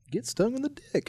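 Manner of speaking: voice cracking up, very high-pitched. Repeating the other speaker's phrase: voice cracking. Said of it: "My voice cracked there".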